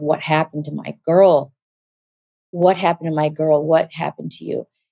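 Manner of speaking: put-on weeping, crying voice. Retelling what a mother said while crying on seeing her: retelling a mother's crying words. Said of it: "she just was crying".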